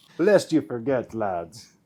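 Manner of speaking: put-on Irish accent. Joking about irish settlers in the caribbean: irish accent. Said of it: "You'll do that accent, huh?".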